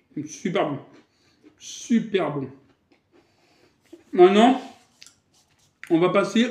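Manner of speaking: speaking with mouth full of food. Tasting the food, the speaker keeps talking with a mouth full. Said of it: "C'est pas poli de parler la bouche pleine".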